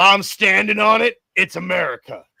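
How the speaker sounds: rough, barking drill sergeant voice. Recalling funny voices people used to do, quoting a drill sergeant character in his voice. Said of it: "this drill sergeant guy, and he was like".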